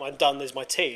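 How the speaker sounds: plain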